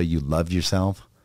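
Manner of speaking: put-on reproachful, judging, disapproving tone. Retelling what people say to them: imitating a disapproving tone. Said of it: "Like it's a negative thing".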